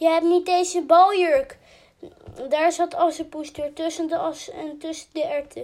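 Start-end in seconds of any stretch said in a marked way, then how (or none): 0.0-1.6 called out loudly, much louder than before. A woman riding off in a coach with her daughters calls back to Assepoester; calling out through window. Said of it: "riep ze door het raampje".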